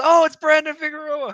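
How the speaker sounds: high, loud, excited starstruck yell.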